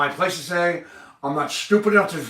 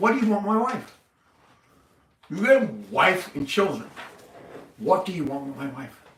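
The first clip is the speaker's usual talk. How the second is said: calm, even, sincere, unangry tone. A speaker stresses to the listener that they are not angry, calm and not angry. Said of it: "I'm saying it all in all calmness ... I don't sound angry, do I? I'm saying it sincerely".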